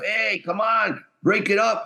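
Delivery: acted out, urgent, high-pitched, drawn-out call. Retelling yelling at the ref during a fight: retelling yelling at the ref. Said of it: "I'm yelling at the ref".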